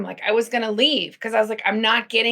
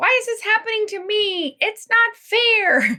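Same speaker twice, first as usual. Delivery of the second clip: put-on very high, slow, drawn-out little girl voice; 11 semitones higher than usual. Describing lessons from a former coach, voicing inner questions in little girl voice. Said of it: "That's my little girl voice".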